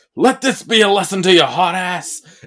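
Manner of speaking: loud, high, angry, menacing monster voice. Recapping a movie kill, retelling what Toxic Avenger says: Toxic Avenger's angry voice. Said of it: "with his angry voice goes".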